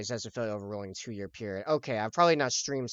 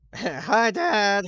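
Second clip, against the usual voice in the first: cracking voice, much higher and louder; 10 semitones higher, 7 dB louder than usual. Greeting Dad on a hyped Friday, voice cracking. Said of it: "I was trying to make my voice crack again".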